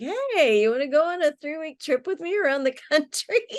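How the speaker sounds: high-pitched, fast, excited delivery.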